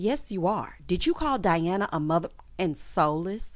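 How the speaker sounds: ordinary delivery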